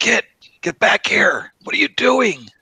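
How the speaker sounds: very high, loud, urgent stage whisper. Player speaking in character in the spirit realm, in a loud whisper. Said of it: "do a loud whisper and say".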